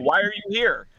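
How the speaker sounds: play-acted shrill, very high yelling. Retelling a county jail visit where a friend yelled: imitating a friend yelling. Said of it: "he starts yelling at me".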